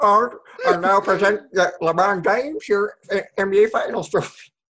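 terrible, off-target, high puppet frog voice. Describing a trophy ceremony idea, the speaker does a terrible Kermit the Frog impression. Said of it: "That was a terrible Kermit".

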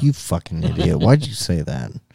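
mock annoyed, pissed-off tone. Imitating Randy's reaction to a joke about him: imitating Randy being pissed. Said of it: "now he's pissed. He's like".

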